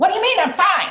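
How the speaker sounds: angry, very high voice. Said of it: "she's talking like this".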